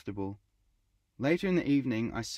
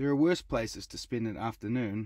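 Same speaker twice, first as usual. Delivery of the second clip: ordinary delivery, nothing marked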